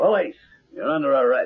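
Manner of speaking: quick, high, urgent police officer voice. Bursting in to scare someone off, pretending to be police: cop impersonation. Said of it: "My cop impersonation was perfect".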